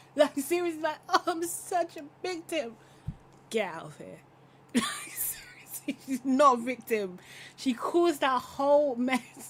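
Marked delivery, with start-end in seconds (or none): 1.1-2.8 tearful, sobbing crying voice, pitched up. Criticizing a woman who cried in a clip, the speaker mimics her: mock crying. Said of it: "that clip with her crying".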